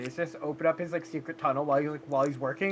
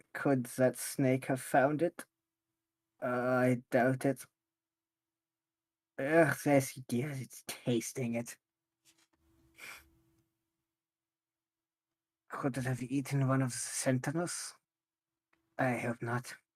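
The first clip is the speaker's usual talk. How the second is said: mumbling under breath, lower and quieter; 4 semitones lower, 4 dB quieter than usual. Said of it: "Just under my breath".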